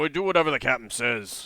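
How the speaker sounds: grunting minotaur creature voice. Voicing the minotaur in the story as he answers, grunting minotaur voice. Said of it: "he grunts and says".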